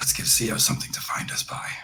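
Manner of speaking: hushed, breathy in-character whisper. Voicing a character who props a gun on his shoulder: whispering in character. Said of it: "just kind of whispers to Nikolai".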